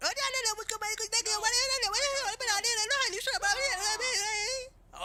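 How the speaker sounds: high, frantic yell while crying.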